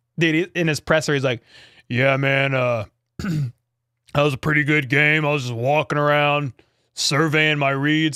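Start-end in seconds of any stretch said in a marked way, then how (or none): 1.9-8.2 deep, low-pitched voice. A speaker retells Trevor Lawrence's press conference, in a Trevor Lawrence deep voice. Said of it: "how deep his voice is".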